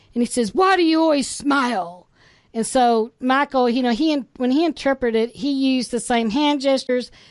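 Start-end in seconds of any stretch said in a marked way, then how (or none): 0.6-2.1 severe, stern, no-nonsense tone. Retelling his question at a restaurant: imitating a stern question. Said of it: "saying something kind of stern".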